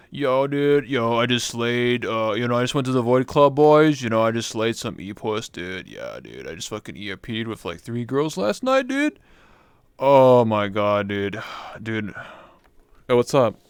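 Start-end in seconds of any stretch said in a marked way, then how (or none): 0.2-12.2 put-on emo boy voice, louder. Streamer imagining his full-body avatar, doing an emo wolf boy impression. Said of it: "I was doing that impression of the emo wolf boy".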